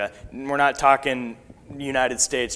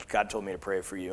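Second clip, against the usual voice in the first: put-on deep Russian accent, quieter; 4 semitones lower, 8 dB quieter than usual. Retelling what a man said while holding their hand, in a deep russian accent. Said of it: "in a deep Russian accent".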